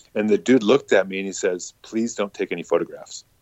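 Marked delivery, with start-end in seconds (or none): 1.9-3.2 put-on deadpan, serious, quieter. Retelling what a man said when the speaker pulled a phone out, imitating deadpan seriousness. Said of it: "Like deadpan serious".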